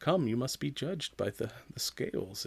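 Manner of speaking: calm, hushed, breathy whisper. Imitating a cult-leader villain who never raises his voice: calm Arthur Harrow imitation. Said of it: "that very, like, calm".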